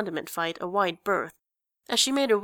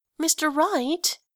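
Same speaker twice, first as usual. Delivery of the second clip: very high, whining, whiny protest tone; 9 semitones higher than usual. Athena protests to their boss Mr. Wright, whining. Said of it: "Athena whined".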